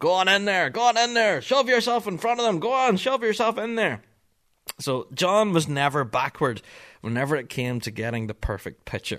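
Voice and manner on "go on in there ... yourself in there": very high, loud, urging shout. Recounting a running joke from the past season, imitating John Kelly shouting. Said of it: "John would kind of shout over".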